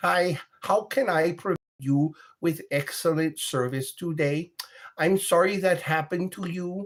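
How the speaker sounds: put-on Russian accent, pitched high. Imitating a tech support girl from Russia: put-on Russian accent. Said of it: "every tech support girl sounds like that".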